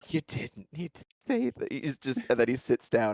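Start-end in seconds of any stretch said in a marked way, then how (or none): 0.1-1.7 soft, wincing, cringing embarrassment. A character, partway sitting down, reacting to another's remark: cringing. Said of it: "and he just cringes".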